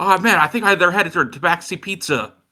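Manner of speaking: high, calling-out yell. During a game, a player has their character yell out. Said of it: "I want to yell out".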